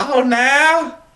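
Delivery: voice jumping very high and squeaky. Retelling how a man reacted when caught smoking: imitating a high-pitched voice. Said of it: "his voice got all high".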